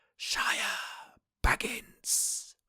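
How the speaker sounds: high, sibilant, hiss-like voice. Describing a figure on screen, then voicing his words, in a high hissing voice. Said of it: "In a high hiss-like voice".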